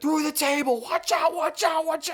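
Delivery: put-on very high, hyped wrestling announcer voice. Retelling how Mike Joy called a wreck: imitating Mike Joy's hyped WWE-style call. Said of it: "doing his best W W E impression".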